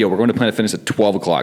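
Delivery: ordinary talk, nothing marked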